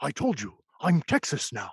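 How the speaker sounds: tough small-town sheriff action movie trailer voice. Describing a movie about a sheriff protecting a town, movie-trailer impression. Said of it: "that was my impression of the".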